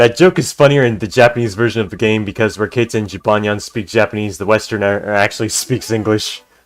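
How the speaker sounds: plain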